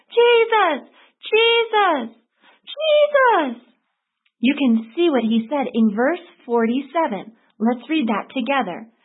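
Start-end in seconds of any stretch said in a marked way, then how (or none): 0.1-3.6 very high, loud, repeated crying out. Speaker acts out a blind man calling out to be heard: retelling a loud cry. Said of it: "boy, did he use it".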